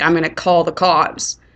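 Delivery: normal talking voice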